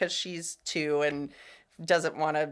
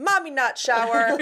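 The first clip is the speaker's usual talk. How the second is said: put-on very loud, high little-kid holler; 9 semitones higher, 8 dB louder than usual. Retelling how a toddler called down from the gate: imitating a toddler yelling. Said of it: "yells down".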